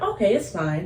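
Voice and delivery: ordinary talk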